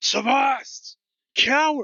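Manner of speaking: full-throated roaring bellow pitched way up. Voicing a character named Galen who rushes at a player: roaring. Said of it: "You hear him roaring".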